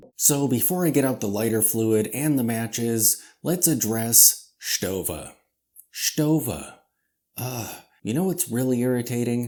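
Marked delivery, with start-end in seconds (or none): 4.6-5.3 put-on German accent, lower. Before showing watches, the speaker says the name Stova: German accent on a name. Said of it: "it's like I'm imitating the accent of the Germans".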